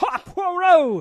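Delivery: put-on shouting. Imitating an actor who shouts every line in a film: imitating an actor shouting. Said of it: "shouts every line".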